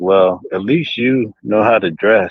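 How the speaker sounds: mock-sarcastic put-on voice. Speaker quotes a guy who called him out the day before, retelling a sarcastic remark. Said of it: "the guy was sarcastic".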